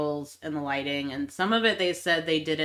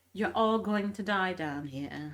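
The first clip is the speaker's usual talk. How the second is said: eerie, off-kilter, unnatural, creepy uncanny delivery; 5 dB quieter than usual. Repeating a movie character's threat to a group: imitating a creepy delivery. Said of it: "in the creepy uncanny valley".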